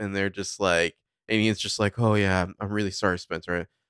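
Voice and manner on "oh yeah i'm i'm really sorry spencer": put-on fake comforting voice. Retelling a scene with Spencer's parents: Ian's fake comforting voice. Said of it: "a fake comforting presence".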